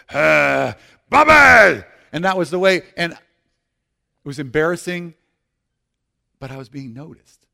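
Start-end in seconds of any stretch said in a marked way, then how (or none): 0.1-1.8 booming, very loud, rough, husky shout. Retelling how a man always called out to him in a room, imitating a husky call. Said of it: "He'd always just kind of husky his voice".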